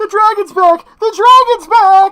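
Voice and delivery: very high, very loud, shrill panicked screams. Narrating a fireball hitting a town as people take cover, townsfolk screaming in panic. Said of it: "they start screaming".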